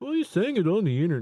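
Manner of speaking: loud, sneering taunt. Mocking people online who point out a contradiction: mocking internet critics. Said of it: "people that are".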